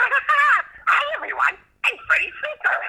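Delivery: very high-pitched, very slowly stretched character voice. Speaker demonstrates the commercial character voice he created, Freddy Freaker voice. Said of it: "But I did the voice".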